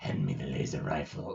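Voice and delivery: breathy, dark, scary whisper. Quoting a villain's line from a cartoon: scary Robotnik voice. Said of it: "Jim Cummings does a scary Robotnik voice".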